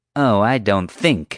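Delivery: scornful, sneering. Correcting someone who only thinks it, the speaker answers, sneering. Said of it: "Marge sneered".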